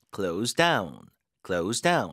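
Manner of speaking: down hit hard with strong stress and falling tune.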